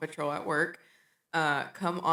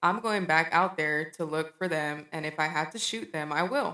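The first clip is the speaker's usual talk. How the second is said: normal talking voice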